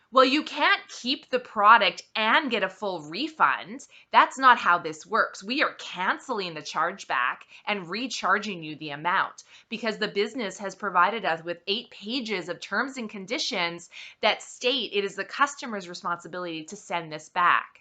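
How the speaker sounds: usual speaking voice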